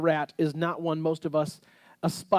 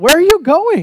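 very loud, very high yell; 11 semitones higher, 14 dB louder than usual. Parent retelling calling out to children rushing past the kitchen, imitating a yell. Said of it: "and I yell".

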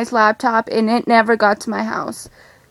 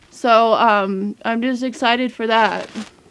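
ordinary talk

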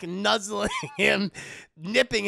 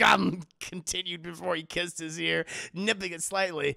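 plain

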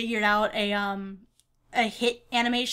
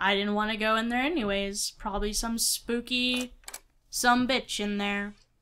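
ordinary talk

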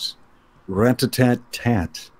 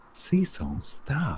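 put-on girl voice, very hushed and soft; 3 semitones higher, 10 dB quieter than usual. Reading a comic aloud, the speaker voices the girl stopping cecil, in a girl voice. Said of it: "That was my girl voice".

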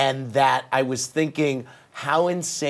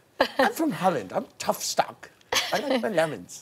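high, swooping sing-song voice with wide pitch swings; 7 semitones higher than usual. Trying a first impression when asked for a Yolanda Foster impression: Yolanda Foster impression. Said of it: "do your best impression of Yolanda Foster".

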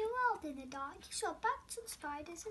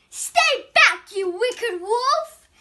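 very loud, shrill, high-pitched shout; 6 semitones higher, 20 dB louder than usual. Luna faces a huge hungry wolf trying to eat her, shouting. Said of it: "he heard a shout".

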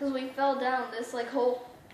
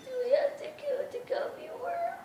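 very high, squeaky put-on voice. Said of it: "and they were like".

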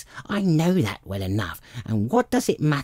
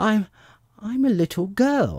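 unsure, hesitant, doubtful, drawn out, pitched up; 8 semitones higher than usual. Pressed by a pigeon to say what she is, a girl answers, doubtful. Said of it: "rather doubtfully".

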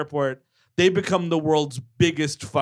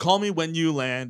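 ordinary talk, nothing marked

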